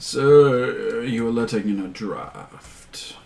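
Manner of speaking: dry, droll delivery. An unseen figure calls from inside to the person outside, in a droll voice. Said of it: "just this droll voice saying".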